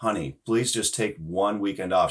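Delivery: put-on imploring, pleading voice. Speaker recalling how they implored her, retelling an imploring plea. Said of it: "I implored her".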